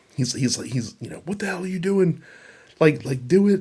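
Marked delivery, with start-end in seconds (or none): 1.3-3.6 put-on high, in-your-face angry screaming. Retelling a wrestling segment where one wrestler screams at another: imitating someone screaming. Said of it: "he's screaming at him".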